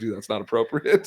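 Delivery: normal talking voice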